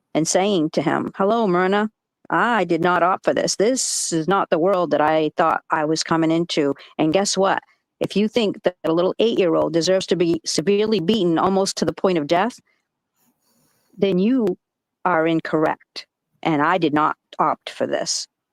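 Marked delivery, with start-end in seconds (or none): none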